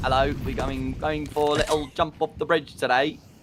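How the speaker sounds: rough, put-on trampy British accent. Joking about doing fake british accents, fake trampy british accent. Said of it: "I go like really trampy, mate".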